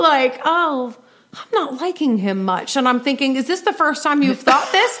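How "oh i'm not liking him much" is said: put-on, revelatory, surprised realization. Quoting a movie character's line the way he says it: mock revelatory delivery. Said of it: "he says it so, like, revelatory".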